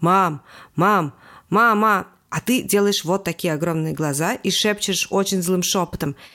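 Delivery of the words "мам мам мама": loud, insistent, repeated nagging, over and over. A mother mimics a child calling up from below during her conversation, mimicking a rude nagging kid. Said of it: "ужасно невоспитанно говорит все время".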